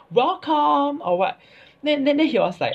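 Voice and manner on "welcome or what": mock very high-pitched, shrill, exasperated yell. Recounting shouting at someone who couldn't hear, retelling own shouting. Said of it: "I was actually shouting".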